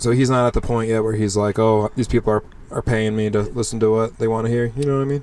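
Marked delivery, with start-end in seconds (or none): none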